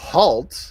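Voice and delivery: reverberating, echoing, authoritative, commanding guard voice. Narrating a game, voicing a guard who points at you: echoing guard voice. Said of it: "as he says in an echoing voice".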